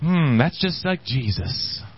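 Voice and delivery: slow, very sarcastic tone. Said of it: "That was very sarcastic".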